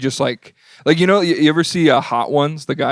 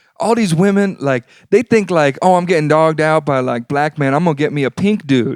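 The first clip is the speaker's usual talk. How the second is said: put-on borrowed street slang, wannabe manner; 2 semitones higher than usual.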